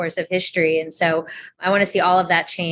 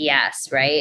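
ordinary talk, nothing marked

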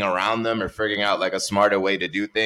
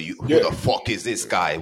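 put-on Italian accent. Imitating people reacting to a newcomer: imitating an Italian accent. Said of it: "Italian accents".

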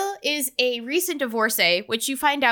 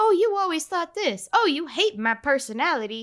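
high, squeaky cartoon mouse voice; 4 semitones higher than usual. Acting out a couple's chit-chat about their relationship, in a Meg Ryan voice. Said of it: "Sound like Mickey Mouse".

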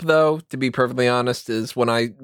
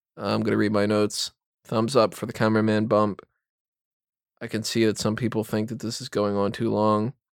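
flat, droning monotone with no variation; 2 semitones lower, 4 dB quieter than usual. Showing how a podcast host could sound reading notes, in a flat monotone voice. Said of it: "I hope that I don't have a monotone voice on these podcasts".

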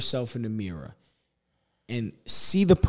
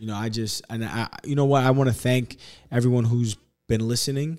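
normal talking voice

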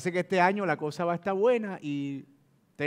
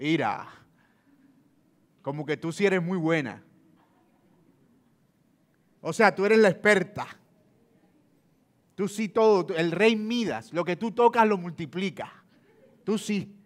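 put-on, heavily laid-on sarcastic delivery. Dramatizing a married couple's money argument as the husband: sarcastic tone. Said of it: "Juan le contesta en tono sarcástico".

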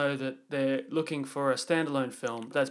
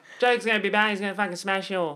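put-on high-pitched, loud, belted Australian accent; 6 semitones higher, 5 dB louder than usual. Retelling what a character kept saying in the film: imitating Harley Quinn's Aussie accent. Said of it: "in her Aussie accent".

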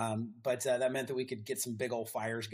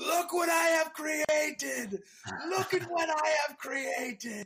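very high-pitched, drawn-out shrieking yell; 5 dB louder than usual. Retelling a shirtless man dancing around a fire, acting out his screaming. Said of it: "he starts screaming".

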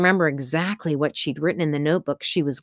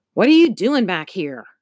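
furious, angry voice, loud and fast; 3 semitones higher, 5 dB louder than usual. Narrator reading Mr. Pincer's line to Mr. Allslip, angry voice. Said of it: "Pincer's voice sounded angry".

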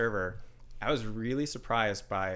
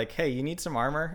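put-on high young kid voice, about twelve years old; 5 semitones higher than usual. Retelling a kid who came up to the speaker, in a 12-year-old voice. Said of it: "like a 12-year-old voice".

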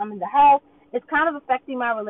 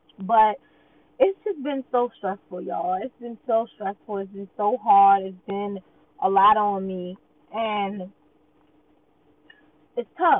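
voice near tears, fighting off crying; 2 semitones lower than usual. Finally opening up after keeping things in, the speaker talks while holding back tears. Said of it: "I'm trying not to cry".

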